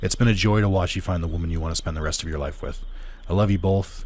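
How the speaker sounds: usual speaking voice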